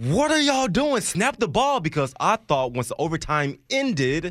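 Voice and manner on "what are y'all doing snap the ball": very high-pitched, loud screaming. Retelling yelling at the TV as the Chiefs drove: imitating screaming at the TV. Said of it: "I was screaming at my T V saying".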